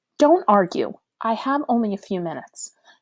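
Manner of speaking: authoritative, commanding tone. Narrator reads her order to a crow to come down, authoritative. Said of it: "in a voice so authoritative".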